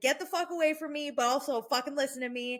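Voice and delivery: mock worked-up female rant, high and heated. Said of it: "she's going off".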